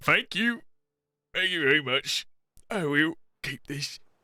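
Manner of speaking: high, sniffly, teary voice, holding back tears. Game master voicing a character who has just received something from the party, sniffling, holding back tears. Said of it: "as he's like sniffling, trying not to cry".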